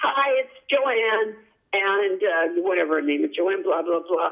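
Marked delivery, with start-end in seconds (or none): 0.0-1.4 upbeat, spirited, lively delivery. Retelling a scam message left on an answering machine: imitating spirited-sounding Joanne. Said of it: "this sort of spirited sounding woman going".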